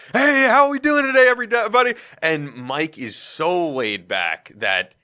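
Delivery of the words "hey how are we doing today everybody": put-on over-the-top excited radio voice, higher and louder. Describing a radio host's style: imitating Chris Russo, over-the-top excited. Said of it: "a really over-the-top, excited".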